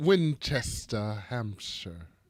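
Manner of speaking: put-on English accent. Trying the town name again, imitating SJ: put-on English accent. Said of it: "Try that again".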